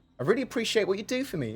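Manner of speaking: very high, syrupy sarcastic lilt. Giving an example of a subtle insult, in a sarcastic tone. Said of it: "It has like a more sarcastic tone".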